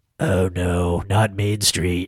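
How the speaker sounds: low, gruff voice with drawn-out delivery. Imitating a character's reaction in a movie being discussed: Charles Bronson impression. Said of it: "let me do my Charles Bronson".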